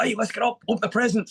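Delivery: high-pitched, loud, excited delivery.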